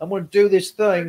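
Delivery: put-on British accent, casual tone. Imitating Tom Holland describing a challenge he took: Tom Holland impression. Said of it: "British accents, man".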